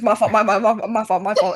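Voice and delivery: mock stuttering, put-on stammer. Retelling a friend's apology after a loud burp: imitating someone stuttering. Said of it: "he starts, like, stuttering like that".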